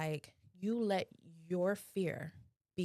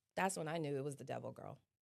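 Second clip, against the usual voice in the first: normal talking voice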